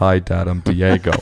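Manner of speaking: dumb, dopey, dim-witted big pit bull voice. Showing the voice he and his wife give their pit bull: Diego's dumb dog voice. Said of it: "we always make him talk like this, kind of dumb. This is his voice".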